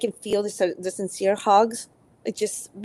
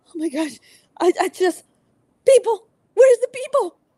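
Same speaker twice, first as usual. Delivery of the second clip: acted, on the verge of tears, very high, raised voice; 10 semitones higher, 5 dB louder than usual. Describing being alone at home too long: imitating own tearful voice. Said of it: "I'll just start tearing up and go like".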